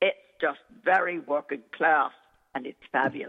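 South London Cockney accent. Speaker demonstrating a fellow actor's accent, in a Cockney accent. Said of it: "he has an accent like this".

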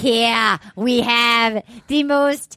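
poor attempt at Australian accent. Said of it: "We're terrible".

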